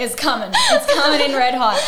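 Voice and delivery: excited, high, loud laughing burst.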